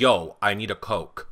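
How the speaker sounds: very drawn-out, slow, blunt, tough voice. Retelling how the same people talk the next second: imitating a tough switched accent. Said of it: "they're like".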